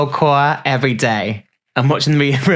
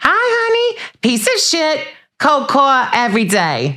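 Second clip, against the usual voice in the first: very high-pitched voice, swooping and swinging; 12 semitones higher than usual. Showing off impressions for the Bravo fans, starting with a Teresa impression. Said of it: "that's Teresa".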